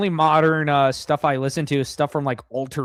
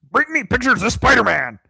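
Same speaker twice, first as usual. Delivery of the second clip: raised pitch, demanding tone; 7 semitones higher, 3 dB louder than usual. Giving the others a try at an impression: J. Jonah Jameson impression. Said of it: "That's my Jameson impression".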